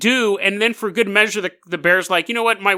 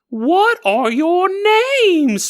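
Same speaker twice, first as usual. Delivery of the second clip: very high, squeaky, slow bear voice; 10 semitones higher than usual. Retelling a bear banging on a tent, asking the people's names, high-pitched bear voice. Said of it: "This bear, though, had a high voice".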